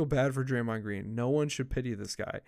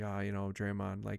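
put-on sad monotone, lower in pitch and quieter; 5 semitones lower, 8 dB quieter than usual. Retelling a clip of Steve Kerr on Draymond: imitating Steve Kerr's sad monotone. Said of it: "he just had like this monotone".

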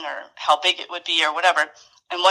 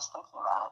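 choked-up whisper, nearly crying; 8 semitones lower, 14 dB quieter than usual. Recalling personal moments with staff, close to tears. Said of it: "I'm gonna start crying right now".

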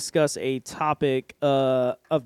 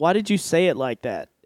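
ordinary delivery

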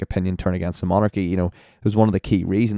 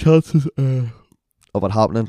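slow, stretched-out words spoken through a yawn; 4 semitones higher than usual. Explaining why they wanted to be an astronaut, while yawning. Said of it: "Sorry, I'm yawning here".

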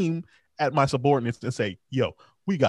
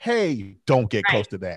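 composed, cool-headed, calm low voice; 4 semitones lower than usual. Retelling what a man in the street said to others, retelling a calm warning. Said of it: "And then he calmly says".

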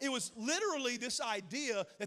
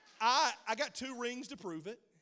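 ordinary talk, nothing marked

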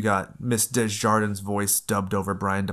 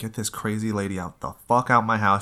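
normal talking voice

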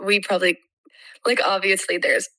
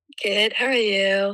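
sick, under-the-weather voice. A guest called in while sick, answering the host's greeting in a sick voice. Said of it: "I love this sick voice".

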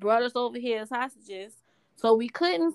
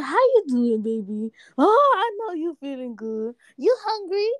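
put-on high, heightened, sing-song baby talk; 5 semitones higher than usual. Showing how people talk to a baby, in heightened-pitch baby talk. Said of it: "talking to them in a heightened pitch".

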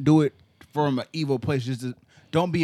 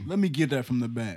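put-on pompous, arrogant voice, quieter; 2 semitones lower, 4 dB quieter than usual. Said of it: "and very arrogant, like".

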